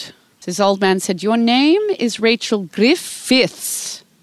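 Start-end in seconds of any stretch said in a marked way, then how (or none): 1.2-4.0 put-on high, botched Welsh accent drifting into Indian. Retelling an old man correcting the speaker's name, bad welsh accent, sounding indian. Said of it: "I'm sounding actually Indian".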